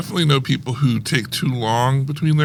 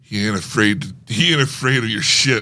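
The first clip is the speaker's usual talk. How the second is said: put-on grizzled old gangster voice, lower; 3 semitones lower than usual. Performing a movie-scene tagline bit: grizzled old mob guy voice. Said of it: "the grizzled old guy gives a tagline".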